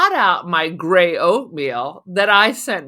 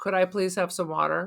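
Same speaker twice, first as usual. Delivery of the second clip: put-on polite tone, quieter; 10 dB quieter than usual. Retelling how diners asked a waitress for water: imitating a polite request. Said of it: "they were so fucking polite".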